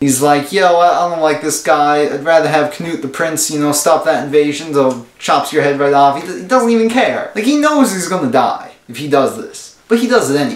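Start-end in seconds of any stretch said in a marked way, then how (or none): none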